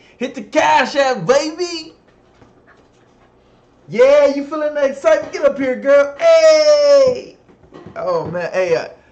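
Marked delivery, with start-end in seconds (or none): 0.2-7.4 loud shouting, higher and louder. Hyping up the viewers to send money, too loud. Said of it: "if that was too loud, I do apologize".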